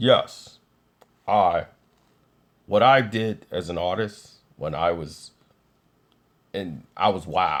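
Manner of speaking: deep, low, slow put-on voice. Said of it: "[name]' voice sound more like this".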